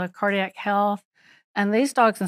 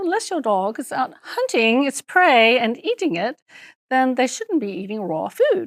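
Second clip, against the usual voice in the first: cute, sing-song put-on Scottish lilt; 4 semitones higher than usual. Quoting a Scottish veterinarian nutritionist from a lecture: imitating a Scottish accent. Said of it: "she said it with her cute little".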